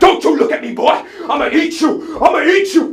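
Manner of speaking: mock, very loud, slow, drawn-out furious yell. Retelling a man on the bus blowing up at him: imitating an angry outburst. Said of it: "he just blows up toward me like".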